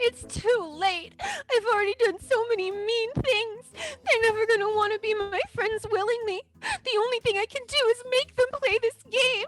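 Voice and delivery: very high-pitched, very slow, tearful sobbing. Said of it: "Meeple Mane starts to cry".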